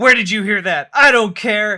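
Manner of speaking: frazzled, yelling voice. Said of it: "I'm yelling at you to prove".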